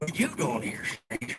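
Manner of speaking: put-on horror-film old man voice, backwoods stranger from the woods. Acting out an old guy coming out of the woods in a horror movie: horror-movie old man from the woods. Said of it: "an old guy comes out of the woods and say".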